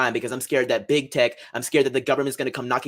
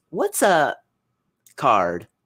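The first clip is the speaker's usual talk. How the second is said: put-on sweet little-girl voice with a sing-song lilt; 2 semitones higher than usual. Retelling what a young girl asked in a video: imitating a little girl's sweet voice. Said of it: "in her little sweet voice".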